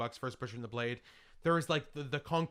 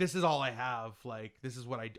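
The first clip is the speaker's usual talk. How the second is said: usual speaking voice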